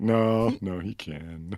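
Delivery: put-on very slow, beaten-down, resigned, defeated delivery. Repeating the other speaker's line back to them; mock-defeated. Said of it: "You sound so defeated. That was great".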